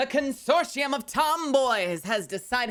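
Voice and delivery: motherly announcing voice. Speaker voicing the consortium of tomboys, in a motherly voice. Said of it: "Why am I voicing that like a mom?".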